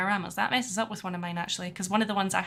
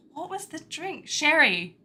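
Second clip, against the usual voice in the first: put-on drunk voice, higher pitched; 8 semitones higher than usual. Retelling a film scene where a captured uncle is drunk: imitating a drunk character. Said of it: "he's all drunk".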